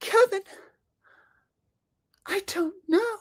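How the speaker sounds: put-on very high, girlish teen girl voice. Acting out a Kevin-and-Winnie exchange: Winnie Cooper impression. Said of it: "Winnie Cooper impression as me".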